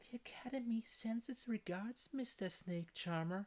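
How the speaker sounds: put-on very high, cute girlish voice. Recounting a story, voicing Helen's line to the snake charmer in Helen's cute voice. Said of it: "she says in her cute voice".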